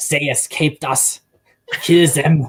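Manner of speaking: slow, heavy German movie villain accent. Explaining how Germans sound in movies, doing a German movie villain accent. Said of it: "the typical German bad guy in a movie".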